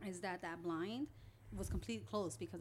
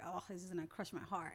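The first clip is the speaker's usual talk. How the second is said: ordinary talk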